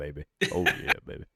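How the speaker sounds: fake low voice. Host missing last week's deeper voice slips into a put-on deeper voice. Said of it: "I'll just talk like this the rest of the time".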